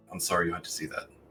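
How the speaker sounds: under the breath. Speaking in character to a quiet companion, under the breath. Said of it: "under my breath".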